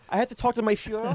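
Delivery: very high-pitched, put-on fake German accent. Suggesting a joke reply to customers ordering coffee: put-on german accent. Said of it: "Just go into a German accent".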